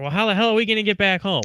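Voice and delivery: play-acted frantic panic, high and rushed. Retelling a companion's reaction to a canceled flight: imitating someone freaking out. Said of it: "So she's freaking out".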